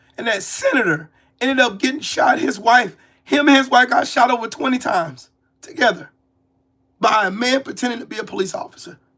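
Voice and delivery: hoarse voice worn down almost to nothing. Talking about politicians being shot, speak with your voice almost gone. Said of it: "I have no voice left. It sounds like I'm crying for real".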